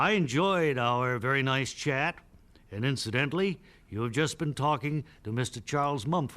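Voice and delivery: ordinary delivery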